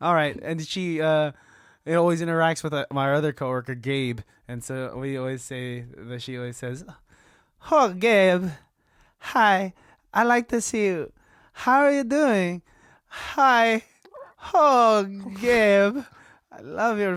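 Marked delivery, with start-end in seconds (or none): 7.7-17.1 put-on Persian accent, very slow and drawn out. Acting out how she always greets your coworker gabe, imitating a woman's accent. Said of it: "I've been working on her accent".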